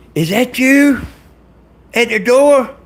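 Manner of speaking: loud calling out, hollering. Retelling a story where a character calls toward the door: imitating someone hollering. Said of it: "she hollers".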